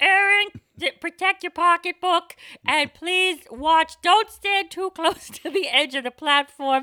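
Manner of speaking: very high, very loud, booming, slow subway announcer voice. Imitating a mother making subway loudspeaker announcements. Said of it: "If my mother did announcements for the M T A".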